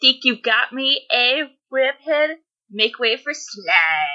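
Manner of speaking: bad teenager voice with drawn-out slide. Asked by the other speaker to voice a line in a really shitty teen voice. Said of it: "put on your best like really shitty teen voice".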